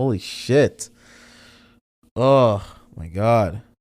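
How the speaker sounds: crying, tearful. Speaker apologizes for the tears while talking, crying. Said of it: "Sorry for the tears".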